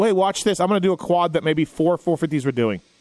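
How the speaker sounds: ordinary delivery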